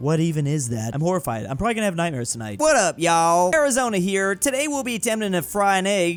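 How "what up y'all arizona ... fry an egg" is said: fake, put-on Southern American accent. Voicing a character's video intro in a put-on southern accent. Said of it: "I'm giving them a southern accent".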